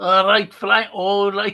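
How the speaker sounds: put-on Yorkshire accent. Talking football, the speaker tries out a yorkshire accent. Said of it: "good Yorkshire uh, accent there".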